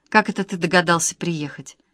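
ordinary delivery, nothing marked

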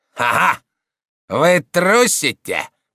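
contemptuous, sneering, scornful tone with a laugh. A man answers an abbot's explanation, contemptuous. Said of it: "презрительно спросил Роден".

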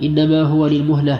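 usual speaking voice

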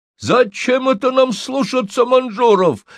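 very high, angry hollering outburst. An older man grabs a missionary by the chest and yells at him; yelled. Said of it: "заорал он".

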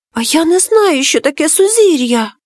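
frightened whisper. Reading a tale, a character answers a talking shell in a frightened whisper. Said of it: "злякано прошепотів Капулє".

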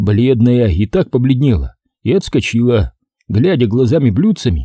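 plain

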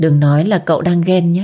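usual speaking voice

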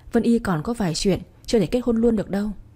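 plain reading voice

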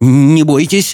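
quavering, trembling, frightened voice. Clinging to her as the door shakes, he reassures her in a trembling voice. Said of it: "дрожащим голосом проговорил он".

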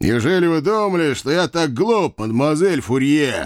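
scornful, sneering, contemptuous, with snorting scorn. Maklak answering Mademoiselle Fourier's protest, with a contemptuous snort. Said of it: "презрительно фыркнул Маклак, грозно сведя брови".

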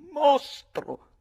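very high, shrill, loud outcry. A young woman reacts to the captain's offer, exclaiming. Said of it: "esclamò quella cara ragazza".

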